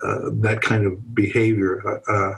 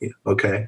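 put-on dead flat, lifeless voice. Retelling a phone call with Judy, imitating his own dead flat voice. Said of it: "the deadness in mine".

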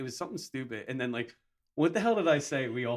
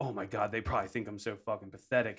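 ordinary talk

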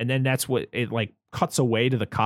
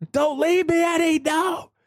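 very high, desperate screaming. Imitating the movie criminal begging his getaway driver not to leave: imitating Brad Dourif screaming. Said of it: "screaming for him to not leave him".

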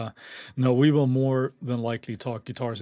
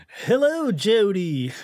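bad Australian accent, pitched up; 8 semitones higher, 4 dB louder than usual. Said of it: "That was my worst Australian accent ever".

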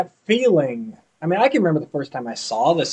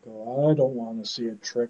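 acted low, very quiet, glum, downcast hero voice; 6 semitones lower, 11 dB quieter than usual. Imitating He-Man, who is so down, to show how he sounds: depressed-sounding He-Man voice. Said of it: "You never hear He-Man that depressed sounding".

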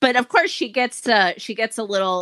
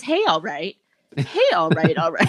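mock emotionless offhand delivery, swooping pitch; 4 semitones lower than usual. Imitating a character from a horror film, flat and emotionless: imitating a flat, emotionless voice. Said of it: "he has, like, no emotion".

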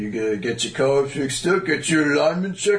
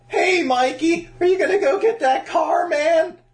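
sudden jump into very high put-on cartoon voice. Doing an impression game, guessed as Shaggy: Shaggy voice.

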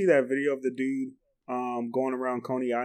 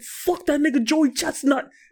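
very high, loud, aggressive put-on New York accent; 14 semitones higher, 6 dB louder than usual. Retelling a remark made after a hot dog eating challenge, mock-aggressive new york accent. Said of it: "in the most aggressive New York accent".

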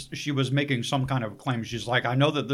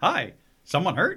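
casual ice cream vendor voice; 4 semitones higher than usual. Retelling a villain's greeting as a paramedic, like a cheery ice cream truck driver. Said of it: "like how an ice cream truck driver would be".

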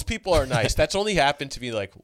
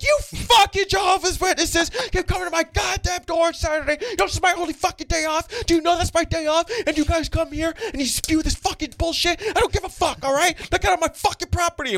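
shrill, very high, furious screaming rant. Retelling a Jehovah's Witness visit where a woman at the door yelled: imitating a woman yelling angrily. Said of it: "I remember the first time I got yelled at".

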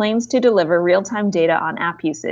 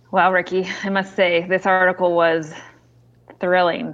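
dry sarcastic tone. Reacting to another speaker's article summary: sarcastic. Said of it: "I sense sarcasm".

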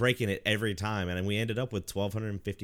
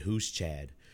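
put-on low, dead serious, straight-faced deadpan; 5 semitones lower, 3 dB quieter than usual. Retelling own answer to a question during a marathon: imitating a dead serious reply. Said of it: "looked at him dead serious and just said".

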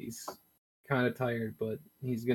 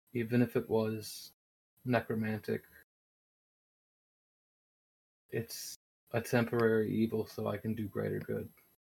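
said quietly under the breath. A role-player's character speaking privately to a companion, under his breath. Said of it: "And under his breath".

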